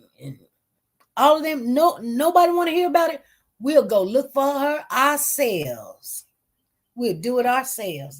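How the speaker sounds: put-on slow, drawn-out Southern accent. Quoting what some people said, in a southern accent. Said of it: "That's what they said in their southern accent".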